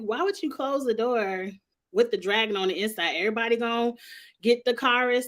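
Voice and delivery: plain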